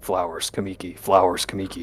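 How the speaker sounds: very quiet, low half-whisper under the breath. Playing a character muttering a reminder to himself: quiet half-whisper. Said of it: "I'm quietly whispering".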